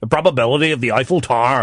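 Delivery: put-on Northern Irish accent. Showing how people in northern ireland say a phrase, northern irish accent. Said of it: "in Northern Ireland say things like".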